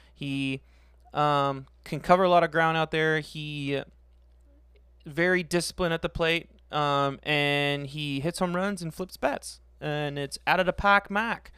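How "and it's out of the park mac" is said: put-on Boston accent, sports announcer style. Talking about a player's Twitter name, saying it in a put-on Boston accent.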